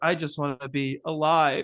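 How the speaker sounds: mock sad child voice. Retelling a movie scene where the kid is getting all sad: imitating a sad kid. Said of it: "getting all sad".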